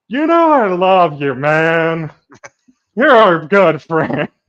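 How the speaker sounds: put-on very loud, booming drunk male voice, drawn out. In a group roleplay scene, playing the wasted character; drunk Haven voice. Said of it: "just fucking wasted and goes".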